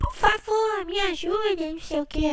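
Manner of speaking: put-on very high, slow, pleading, crying little-child voice. Retelling a story, quoting a crying child asking for help: imitating a crying child's voice. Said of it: "Aquela voz de criança lá".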